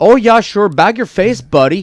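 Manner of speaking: put-on Montana accent. Imitating how people talk in Montana: Montana locals' accent. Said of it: "that's how they talk in Montana".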